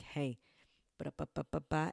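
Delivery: slow, firm, stern teacher voice. A teacher telling the audience about two days in with the kids, in teacher voice. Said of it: "you know the teacher voice".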